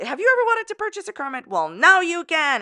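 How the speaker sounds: loud, very high game show announcer voice. Plugging an affiliate link to viewers, the speaker pitches it in a game show host voice. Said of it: "in my game show host voice".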